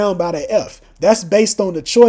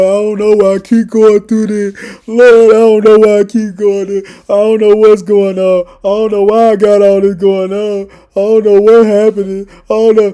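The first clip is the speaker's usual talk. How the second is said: fake, louder boo-hooing, mock crying lament; 7 dB louder than usual. Imitating people crying to the Lord over their trials: mock crying lament. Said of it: "now we boo-hooing".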